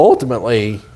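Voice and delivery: voice cracks mid-word on "ultimately". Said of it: "my voice just cracked".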